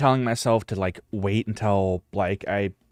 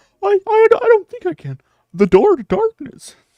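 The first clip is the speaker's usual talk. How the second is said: failed put-on cartoon mouse voice, sliding off; 9 dB louder than usual. Attempting a Mickey voice that turns into Goofy: failed Mickey Mouse voice. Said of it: "can I do a Mickey voice? ... Oh no, it, it turns into Goofy".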